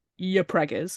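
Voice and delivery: ordinary talk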